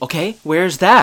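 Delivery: play-acted eager, worked-up tone. Retelling a couple's argument, the speaker quotes the woman: imitating her getting excited. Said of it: "she gets all excited".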